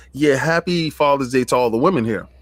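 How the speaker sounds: plain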